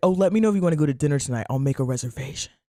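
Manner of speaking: put-on sexy voice. Retelling how she asked about dinner tonight: imitating a sexy invitation. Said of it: "It's so sexy".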